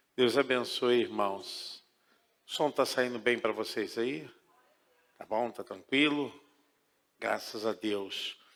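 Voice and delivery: soft, hushed, well below normal volume.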